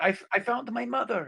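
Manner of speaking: shouting in a character voice. Calling out to others in the open, shouting in character.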